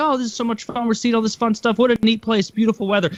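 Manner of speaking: cheerful, carefree, upbeat chatter, pitched high. Retelling a partner enjoying a canoe trip: imitating someone upbeat.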